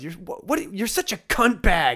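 put-on kid's angry shout. Retelling a kid on the other team yelling back: imitating a kid yelling. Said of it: "He's yelling at me".

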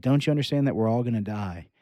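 ordinary talk

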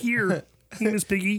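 voice squeezed up very high. Doing a Kermit the Frog impression for the others: Kermit the Frog voice. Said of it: "one of the only ones I can actually do".

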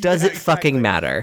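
ordinary delivery

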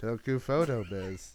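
completely robotic, flat voice with no inflection. Showing another speaker how the phrase should be said, completely robotic. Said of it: "Like just completely robotic".

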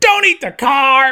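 very high yell with each word drawn out. Retelling a Woody animation test done to a Tom Hanks line: imitating Tom Hanks yelling. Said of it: "Tom Hanks being like".

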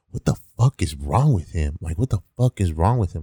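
acted, upset, frustrated, disbelieving outburst. Retelling what a coworker said in the back room: imitating someone really upset. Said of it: "being really upset".

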